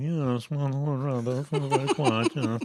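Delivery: put-on old-money Boston Brahmin accent. Imitating a Family Guy character with a jutting jaw: Boston Brahmin accent. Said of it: "The Boston Brahmin is like that guy in Family Guy".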